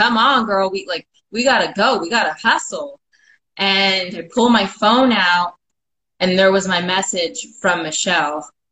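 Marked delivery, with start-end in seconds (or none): 0.0-3.0 urgent, hurried, self-encouraging pep-talk tone. Retelling a pep talk to oneself at mile fifty-five: retelling yelling at oneself. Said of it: "now I'm yelling at myself".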